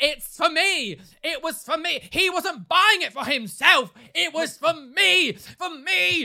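very irate, loud, insistent, very slow and drawn out. Retelling a woman arguing with the speaker at work, imitating someone really irate. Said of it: "she was getting, like, really irate".

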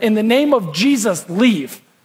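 play-acted irritated, fed-up tone. Retelling how Paul turned to the girl: imitating an annoyed command. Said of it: "out of Paul's annoyance".

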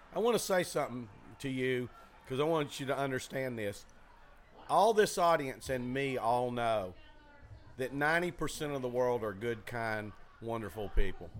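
ordinary delivery

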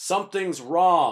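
put-on American accent. Retelling what a magician said on stage after being shot: American accent. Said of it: "just this American accent".

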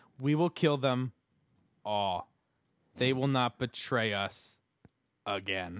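deep, loud mechanical robot voice with long gaps. Retelling a show scene where a man speaks to his mirror, robotic voice with long pauses. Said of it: "he talks like a robot".

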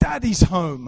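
put-on loud, high-pitched, happy shout in a child's voice.

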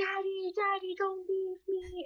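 put-on acted, very high, drawn-out little girl's scream. Retelling a movie scene where a girl chases her leaving dad: imitating a screaming girl.

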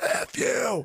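put-on short, light, mild shouted curse. Retelling a quarterback turning to the sideline: imitating a big loud yell. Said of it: "you just hear this big, loud".

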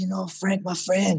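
really bad, clumsy put-on Portuguese accent. Retelling what a man said with his arm around him: bad Portuguese accent. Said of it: "this is a really bad Portuguese accent".

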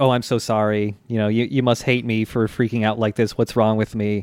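mock calm, calmed-down tone. Recounting a woman who spilled tea and shouted, then apologized: imitating her calming down. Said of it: "And then she calms down".

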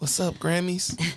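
put-on raspy voice. Joking about what he could have said on stage: imitating his raspy voice. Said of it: "In his voice, the raspy voice".

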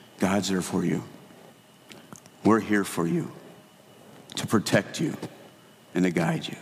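calm, soothing, reassuring delivery. Retelling what a classmate said in the chapel: imitating Douglas's calming voice. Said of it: "told me in a calming voice".

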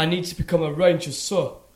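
put-on odd blend of English and Southern American accent. Quoting a film character to the others: imitating his weird mixed accent. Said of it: "His accent is so insane".

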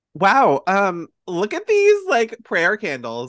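bad, high, swooping, over-the-top Valley Girl accent. Imagining how a college admissions advisor reacted, in the worst Valley Girl accent. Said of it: "Valley Girl accent voice".

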